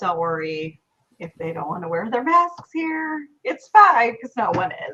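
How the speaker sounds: dry delivery, sarcasm showing through. Joking about people not wearing masks here: sarcastic. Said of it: "I'm being sarcastic".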